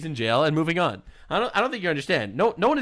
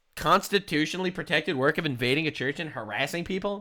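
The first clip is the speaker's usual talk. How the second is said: usual speaking voice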